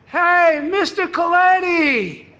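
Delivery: big, loud, high, outgoing hollered call. Pulling into the driveway, the speaker retells Jeff calling out loudly from the porch steps. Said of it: "Jeff has a loud voice".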